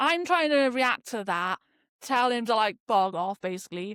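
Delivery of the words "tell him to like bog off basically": ordinary talk, nothing marked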